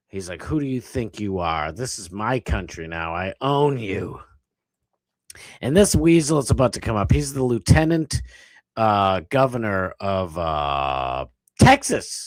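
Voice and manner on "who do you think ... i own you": pissed-off, heated, domineering angry voice. Voicing what an official in a clip is thinking: imitating someone angry. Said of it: "He was pissed".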